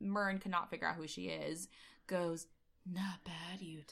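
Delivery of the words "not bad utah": put-on breathy woman's voice, quieter. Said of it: "very breathy".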